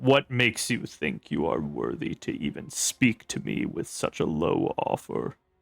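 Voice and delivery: hushed, breathy, low rumble in the throat. Narrator voicing Heldraxis, who has been offered one trinket: Heldraxis rumbling in his throat. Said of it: "just kind of rumbles in his throat".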